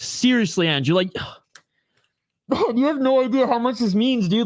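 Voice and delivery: near-tearful, deeply moved, on the verge of tears. Thanking a viewer for a donation, about to tear up. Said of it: "I'm actually about to tear up".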